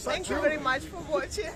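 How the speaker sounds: laughter breaking in, like holding back a giggle fit.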